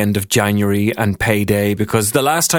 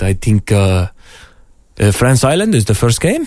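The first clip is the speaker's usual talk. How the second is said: put-on French accent; 3 dB louder than usual. Retelling his answer about the first game, imitating a French accent. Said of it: "in his sexy French accent".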